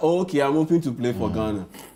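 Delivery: ordinary talk, nothing marked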